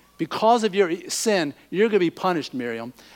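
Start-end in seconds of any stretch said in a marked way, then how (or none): none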